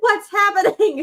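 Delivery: called out up high. Retelling hearing everyone downstairs screaming during the match: imitating own past scream. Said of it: "screaming back".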